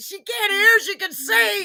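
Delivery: yelling. Repeating how the other speaker yelled at someone: imitating someone yelling. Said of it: "I like that you're yelling at her".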